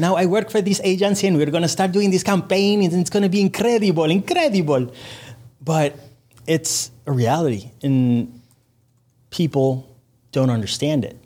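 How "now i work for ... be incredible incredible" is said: put-on Spanish-accented English voice, pitched higher. Answering agency coworkers who ask how it would sound in Spanish: Sofia Vergara voice. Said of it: "I start doing the Sofia Vergara voice".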